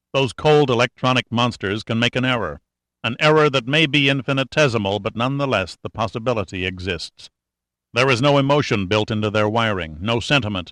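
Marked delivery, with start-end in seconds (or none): none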